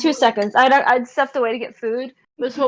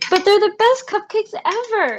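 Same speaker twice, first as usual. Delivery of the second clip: slightly raised, very high voice; 9 semitones higher than usual. Voicing a character after another character leaves, with voice raised a little. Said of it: "taking care to like kind of raise her voice a little bit".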